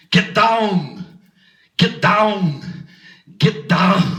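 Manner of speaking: put-on very slow, stretched-out Austrian accent. A joke of Schwarzenegger as a disco dancer, in Arnold Schwarzenegger impression. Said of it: "Here's my impression of Arnold Schwarzenegger as a disco dancer".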